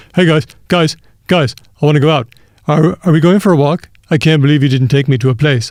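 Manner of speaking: dopey, dumb, goofy dog voice. Showing how they voice their dog's thoughts: dumb dog voice. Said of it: "I'm always giving my dog the dumb voice".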